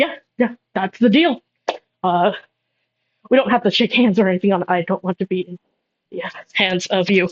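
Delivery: terrified, scared, nervous voice. Narrator voicing a barkeep accepting a deal with Techno, terrified barkeep. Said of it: "He seems like terrified of Techno".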